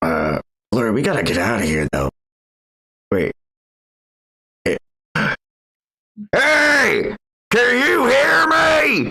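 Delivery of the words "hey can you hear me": very high, very slow, drawn-out shouting. Voicing a character trying to get others' attention: shouting in character. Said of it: "starts shouting and talking".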